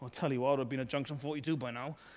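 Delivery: put-on mumbling, quiet and fast. Speaker describes what a man is not doing, mock mumbling under breath. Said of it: "mumbling under his breath".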